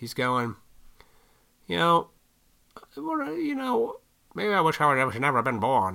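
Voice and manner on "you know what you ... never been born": animated character voice with wide pitch swings. Retelling a movie scene where the hero wishes he'd never been born: George Bailey voice. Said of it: "in that voice that, uh, he does".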